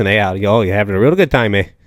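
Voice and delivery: put-on Minnesotan accent. Listing American regional accents, demonstrating a Minnesota accent. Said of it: "people from Minnesota who talk like this".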